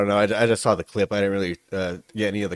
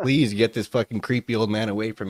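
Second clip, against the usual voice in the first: usual speaking voice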